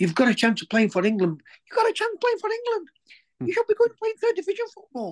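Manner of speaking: very high, squeaky, little angry ranting voice. Retelling how Paul went ballistic with him, squeaky mock-angry Paul impression. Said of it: "going ballistic with me in his squeaky little voice".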